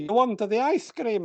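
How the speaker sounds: high, put-on Italian accent. Retelling what a man said to the speaker on a walk in Skipton, imitating an Italian voice. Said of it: "this man came out in an Italian voice and said".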